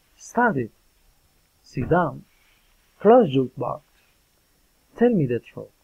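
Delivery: falling intonation, pitch drops on each last word. English pronunciation lesson demonstrating commands: falling intonation on commands. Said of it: "Commands and fallen intonation".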